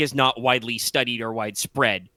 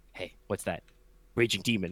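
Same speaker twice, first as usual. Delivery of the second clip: low, hushed half-whisper under the breath; 5 semitones lower, 8 dB quieter than usual. Retelling a player's half-whisper to his opponent during a match: retelling a half-whisper. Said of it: "he just whispers".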